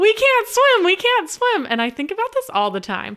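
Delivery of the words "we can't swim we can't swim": mock very high-pitched, slow, drawn-out shouting. Recalling being rocked on a pool float with a brother, retelling a yell. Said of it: "we both just started yelling".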